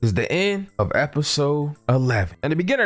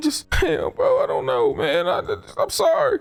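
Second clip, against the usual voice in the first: very high, put-on blubbering sobs; 13 semitones higher than usual. Acting out both sides of a scene, the scolded one answers with mock crying. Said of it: "Why is you crying".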